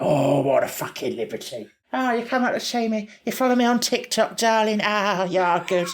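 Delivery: put-on grandmotherly high voice. After telling the other speaker he sounds like Nan, doing Catherine Tate's Nan voice.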